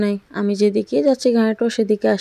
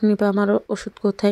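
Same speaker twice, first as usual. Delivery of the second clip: plain reading voice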